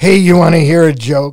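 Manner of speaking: put-on drunk slurred speech. Retelling a drunk friend's words on an employee shuttle: imitating T-Bird slurring drunk. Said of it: "he's slurring so bad".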